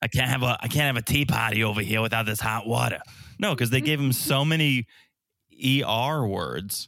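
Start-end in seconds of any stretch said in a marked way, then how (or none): 0.0-3.0 put-on, mock Boston accent. Joking with another speaker about tea and hot water, in a put-on Boston accent. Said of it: "That's the Boston accent".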